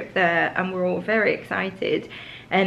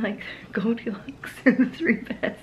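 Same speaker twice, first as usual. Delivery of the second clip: laughing while talking, much quieter; 2 semitones higher, 4 dB quieter than usual. Unpacking with others, cracking up at someone nearby: laughing while talking. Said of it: "I'm laughing at Oscar".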